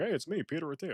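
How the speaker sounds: high, casual tone. Mocking a man who is trying to appear on many podcasts: imitating Peter Attia. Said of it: "and he's like".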